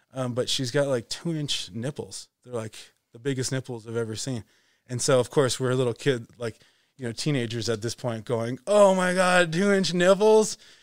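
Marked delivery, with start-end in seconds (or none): 8.7-10.6 put-on, loud, high exclamation through laughter. Retelling teenagers reacting to the team manager: imitating laughing while talking. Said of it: "just cracking up".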